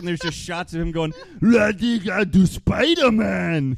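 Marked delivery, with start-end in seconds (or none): 1.4-3.8 loud, very slow fake Russian accent. Imitating a man driving a truck saying Spider-Man, in a fake Russian accent. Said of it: "just garbling nonsense while saying Spider-Man in between".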